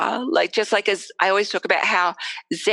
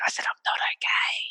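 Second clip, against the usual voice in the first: hushed whisper, barely voiced. Retelling telling a doctor something, imitating own whisper. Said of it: "so I just whispered it".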